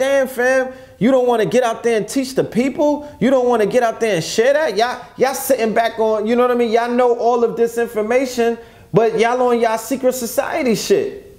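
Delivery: loud, high-pitched pleading.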